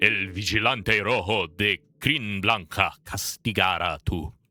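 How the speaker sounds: deep, rumbling, ghost-like voice. Game master voicing a floating lion's skull rising from a shrine, deeper rumbling voice. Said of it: "A deeper rumbling voice echoes".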